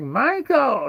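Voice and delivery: loud, shrill, high-pitched screeching scream. Telling how an aunt-type character screamed up the stairs for Michael: imitating her screaming. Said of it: "She keeps screaming".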